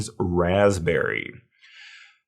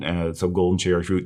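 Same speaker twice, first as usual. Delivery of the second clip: ordinary talk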